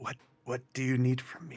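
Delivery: quiet, hushed half-whisper. In a roleplay game, the character half-whispers back to voices calling to them, half-whispering quietly. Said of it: "I whisper back quietly".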